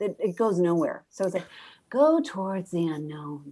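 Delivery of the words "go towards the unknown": serene, put-on, overly calm, unbothered delivery. Mocking posts that always want to seem really calm, mocking a calm voice. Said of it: "that voice that always wants to seem really calm".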